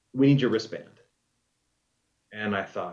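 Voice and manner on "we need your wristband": ordinary delivery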